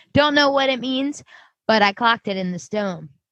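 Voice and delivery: plain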